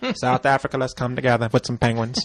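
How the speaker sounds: strong, grand, laid-on speech voice. Showing how an actor sounds playing Nelson Mandela: Morgan Freeman impression. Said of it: "he sounds like this".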